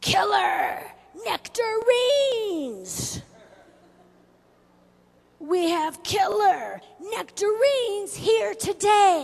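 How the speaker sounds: very loud, high, drawn-out, swooping hollering. Retelling how a fruit seller greeted the car: imitating someone screaming. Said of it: "he is screaming at the top of his lungs".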